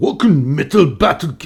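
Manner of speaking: bad, failed put-on German accent. Saying the contest name after being asked for German: bad put-on German accent. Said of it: "J'aimerais bien en allemand".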